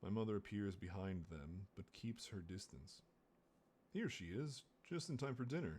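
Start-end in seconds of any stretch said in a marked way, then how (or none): 3.9-5.8 overly cheerful, a touch too bright, sing-song. Reading a novel aloud, the mother greets the peacekeepers: a little too brightly. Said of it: "she says a little too brightly".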